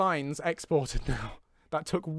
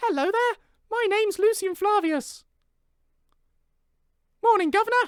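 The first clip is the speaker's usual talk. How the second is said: put-on very high-pitched, loud little-kid voice; 5 dB louder than usual. Asked on stream for his best child voice, doing a child voice. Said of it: "Give us your best child voice".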